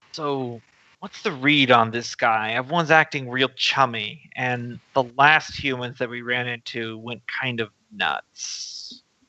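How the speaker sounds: low, hushed half-whisper under the breath. As Ivy, walking beside a companion, speaking in a low half-whisper. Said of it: "kind of in a low whisper".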